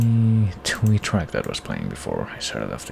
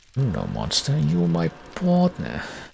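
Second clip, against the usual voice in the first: put-on Jersey or Boston accent; 8 semitones higher than usual. Retrying game dialogue in a stereotypical New Jersey or Boston accent. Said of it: "stereotypical, uh, New Jersey or Boston".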